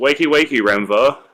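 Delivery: high energetic rousing tone. A player's character walks to a sleeping companion's bed to wake him: fairly loud voice. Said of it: "in a like loud but not super loud voice".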